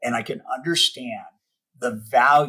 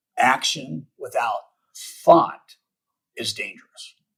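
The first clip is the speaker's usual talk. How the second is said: very slow, deliberate phrasing. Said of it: "I gotta say this really slowly".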